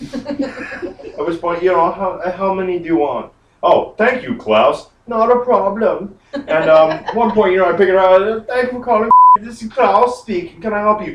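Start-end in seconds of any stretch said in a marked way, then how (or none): 8.5-11.1 put-on high swooping German accent.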